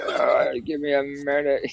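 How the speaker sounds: very slow, rough, gravelly just-woke-up croak. Imitating a friend just woken up on the morning show: imitating a rough just-woke-up voice. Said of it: "the throat's bleeding".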